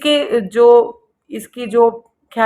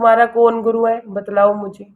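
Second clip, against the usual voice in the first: plain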